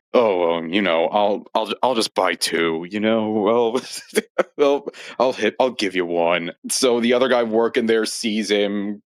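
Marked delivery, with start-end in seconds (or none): 0.1-6.5 mock flirtatious voice. Retelling a movie scene, imitating a flirty Tumblr sexy man. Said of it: "in full, like, ooh-woo Tumblr sexy man mode".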